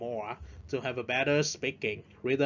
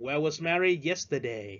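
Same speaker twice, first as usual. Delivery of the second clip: voice drops on the word 'yesterday'; 2 semitones higher than usual. Teaching falling intonation in a WH question, falling on 'yesterday'. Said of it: "Chữ yesterday, à, chúng ta xuống giọng".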